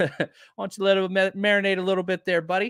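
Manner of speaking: put-on Canadian accent. Discussing a player's role, the speaker riffs: Letterkenny-style Canadian accent. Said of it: "that's as good Canadian accent as I could do".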